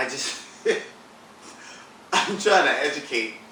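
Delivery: laughing and giggling through the words.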